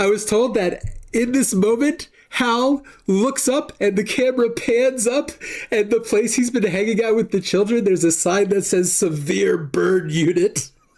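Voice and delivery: talking through laughter. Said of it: "I can't believe I'm laughing now".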